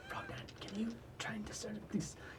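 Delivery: soft, quiet whisper. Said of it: "I'm gonna whisper to".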